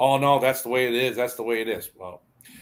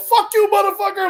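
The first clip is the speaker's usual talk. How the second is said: put-on full-blown rage, screamed very high; 8 dB louder than usual. A bus driver retells shouting back at a driver who cut him off, retelling a furious shout. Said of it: "I lost. I literally go".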